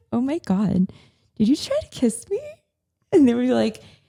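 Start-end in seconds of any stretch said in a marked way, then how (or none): 0.1-2.4 put-on laughing while talking, higher. Retelling own reaction to a photographer's kiss attempt: retelling own laughing reply. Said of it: "I start laughing like".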